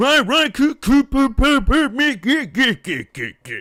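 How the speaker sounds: put-on weirdly echoey announcer voice. Retelling what the in-game MC just said: imitating weirdly echoey MC. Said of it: "the weirdly echoey M C just like".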